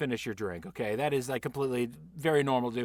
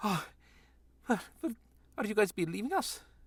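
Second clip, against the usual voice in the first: winded and stumbling, out of breath, pitched-up panting; 8 semitones higher, 3 dB quieter than usual. Voicing a worn-out kitchen worker who asks the leaving group a question: panting in character. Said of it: "he's just panting over there".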